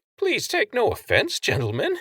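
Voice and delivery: squeaky, very high-pitched voice with swooping squeak. Narrator reading a character addressing two men, in a squeaky high-pitched voice. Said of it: "Stan squeaked in a high-pitched voice".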